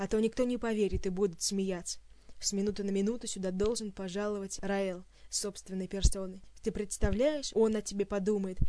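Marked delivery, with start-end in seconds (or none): none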